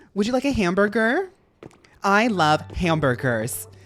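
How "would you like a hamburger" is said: over-the-top American accent, pitched up. Saying hamburger in the most american way possible, exaggerated american accent. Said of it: "I like saying hamburger like in the most American way possible".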